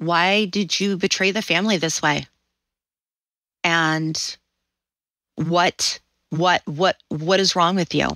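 accusing, reproachful, motherly scolding tone. Retelling a mother's scolding words: imitating someone speaking very quietly. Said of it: "my mother starts in on me very quietly".

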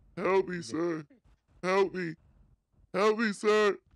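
put-on frantic pleading voice. In a game shootout, a robber pretends to be the hostage, robber faking a scared hostage. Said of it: "I was standing in between the Jimmy and the cop when they were shooting. Acting like the hostage. / I seen this fool [name] panicking. / Acting like the hostage. / Please help me, sir. I'm scared. / I'm".

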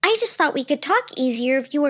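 ordinary delivery

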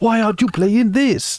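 put-on Greek accent. Podcast host inviting listeners to shout game recommendations, in a put-on Greek accent. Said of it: "what was that accent?".

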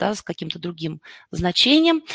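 ordinary talk

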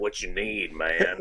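put-on creepy man voice, low and slow drawl. Picturing an empty store with a creepy dude standing there: imitating a creepy dude. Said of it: "a creepy dude standing there".

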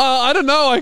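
acted-out panic. Retelling being questioned about where they're staying in New York, retelling own panic. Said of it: "And I start panicking".

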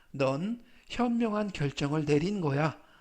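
ordinary talk

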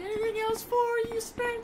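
very high, loud, made-up mock girl voice.

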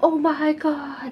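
put-on high, loud, slow screaming in a kid voice. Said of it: "just screaming and".

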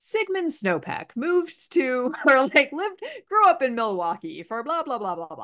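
cadenced, sing-song documentary narrator voice. Asked for her documentary narrator voice, giving a sample in documentary narrator voice. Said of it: "your documentary narrator voice?".

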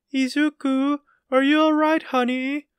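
very high loud call. Narrator reads a mother calling to her son upstairs, yelling from downstairs. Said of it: "Inko yelled from downstairs".

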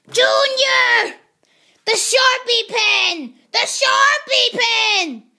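loud hollering. Calling out to Junior, who is trying to sleep, yelling. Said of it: "quit yelling!".

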